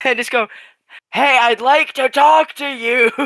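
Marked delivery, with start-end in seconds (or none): 1.1-3.1 booming, loud, pitched-up call. Describing a planned move in the game, speak in a booming Zol imitation voice. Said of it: "in my best Zol imitation voice, cast Thaumaturgy with booming voice".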